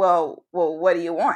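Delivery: rough-edged, gruff, abrasive, defensive tone. Retelling a phone call from the father: imitating a gruff, abrasive father. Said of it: "just so sort of gruff and, like, abrasive".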